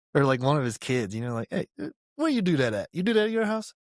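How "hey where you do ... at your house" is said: very high-pitched, swooping, chummy buddy-buddy tone. Speaker retells a drill sergeant talking to them like one of the boys: imitating a casual buddy tone. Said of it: "talking to us like one of the boys".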